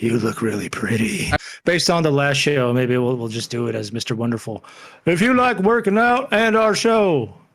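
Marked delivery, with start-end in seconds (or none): 0.0-1.3 creepy male announcer-style voice. Host trying out an announcer voice the other speaker teases, creepy guy voice. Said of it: "some creepy guy".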